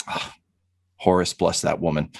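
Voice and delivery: low, murmured under the breath. A player as Nero after another character steps in front, muttering under his breath. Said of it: "he just mutters under his breath".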